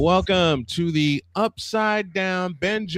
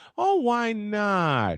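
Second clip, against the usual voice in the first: pretty, sweet put-on innocent voice, "not" drawn out; 3 semitones higher than usual. Retelling a woman's reply after three men said no, in a put-on innocent voice. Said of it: "she puts on this pretty little innocent voice".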